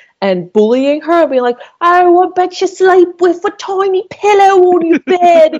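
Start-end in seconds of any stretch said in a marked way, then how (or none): 1.8-5.6 jeering put-on Cockney accent, very high and loud. Retelling teasing a friend on the street with other theater kids, in a cockney accent. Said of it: "we were all doing like Cockney accents".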